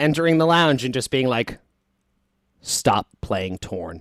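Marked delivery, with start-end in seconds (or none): 2.6-4.0 dead serious, very low, grave tone. Retelling how Brendan burst in while they played: imitating Brendan, very serious. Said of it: "so serious".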